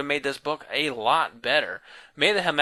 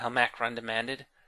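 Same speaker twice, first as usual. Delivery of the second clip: ordinary delivery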